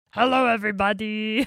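storybook-style monster character voice. Showing the Grover voice used to read a book aloud: Grover voice. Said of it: "I do his voice".

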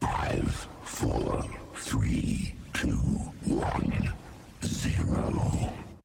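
eerie, creepy whisper, very quiet. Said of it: "That's why I always do it so creepy".

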